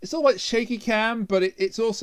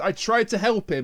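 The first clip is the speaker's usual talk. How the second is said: usual speaking voice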